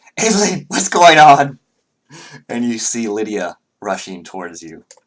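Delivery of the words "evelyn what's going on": very high, very loud, shrill, frantic cry. The game master voices Lydia rushing toward Evelyn's character, Lydia's frantic voice. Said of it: "you hear a frantic voice like".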